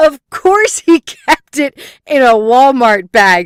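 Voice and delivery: laughing while talking. Telling a story about a stolen brain found in a bag: laughing while talking. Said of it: "I can't even stop laughing".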